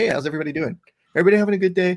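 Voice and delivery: high, friendly tone. Imitating a fighter switching to a friendly greeting after the cut: imitating Henry Cejudo's friendly greeting. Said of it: "And he's like".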